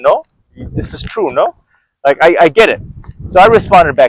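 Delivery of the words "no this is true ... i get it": put-on English with Colombian Spanish accent, swooping pitch. Retelling a girlfriend's text reply: imitating a Colombian Spanish accent. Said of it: "she speaks like that, like, uh, Spanish, Colombian".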